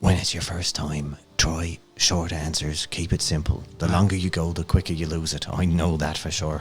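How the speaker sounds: soft little hushed half-whisper. Leaning in close to him to give him a tip, a little half-whisper. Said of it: "give him a little whisper".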